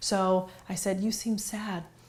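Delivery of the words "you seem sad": quiet, sorrowful-sounding. Retelling own words to a sad child: imitating own sad tone. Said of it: "notice my tone of voice sounded sad".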